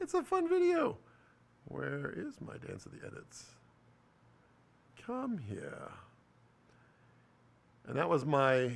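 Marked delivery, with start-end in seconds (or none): 1.7-5.9 whispered, put-on British narrator accent, voiceover style. Searching for one of the videos, in a British voiceover artist voice. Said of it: "my best voice from the British voiceover artist".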